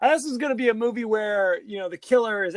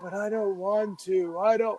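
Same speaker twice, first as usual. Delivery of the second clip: dazed, faraway, trance-like voice; 4 dB quieter than usual. Retelling how she answers him in a fugue state: imitating a dazed fugue state. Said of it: "she kinda goes into, like, a fugue state".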